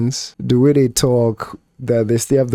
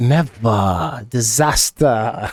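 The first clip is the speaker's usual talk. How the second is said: put-on Nigerian-Australian accent with drawn-out, stretched vowels. Speaker mimics how a man stretched his words, in a stretched Nigerian-Australian accent. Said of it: "the way they stretch it like that".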